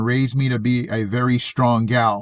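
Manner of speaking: ordinary delivery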